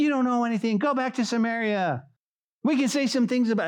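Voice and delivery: put-on yelling.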